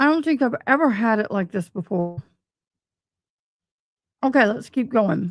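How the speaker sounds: speaking while chewing gum. Live on air with a dry mouth, the speaker keeps talking while chewing gum. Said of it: "I apologize for chewing gum on live".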